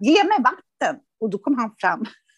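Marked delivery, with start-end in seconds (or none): 0.0-1.0 play-acted yelling, high-pitched shout. Retelling spilling wine and yelling to someone for water: imitating own past yell. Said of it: "sitter jag och skriker på Kipa".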